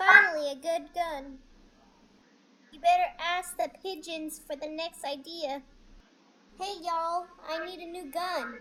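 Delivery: slightly high cat voice. Playing a cat character's game voice lines: slightly high-pitched cat voice. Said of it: "still slightly high pitch".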